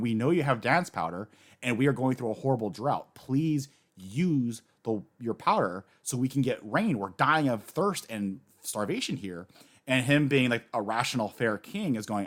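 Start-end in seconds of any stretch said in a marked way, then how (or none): none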